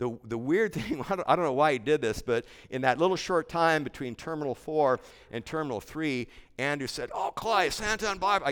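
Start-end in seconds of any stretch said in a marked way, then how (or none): 7.1-8.5 clumsy put-on Australian accent, pitched high. Retelling what Andrew said between terminals, imitating Andrew's Australian accent. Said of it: "imitating Australian accent".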